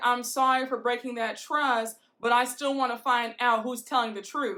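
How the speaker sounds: ordinary talk, nothing marked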